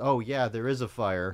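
normal talking voice

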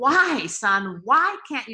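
loud, very slow scream with "why" stretched out. Retelling crying out to his absent son, re-enacting screaming at him. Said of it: "I was screaming at him".

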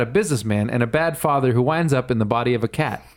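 ordinary delivery

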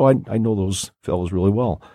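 plain

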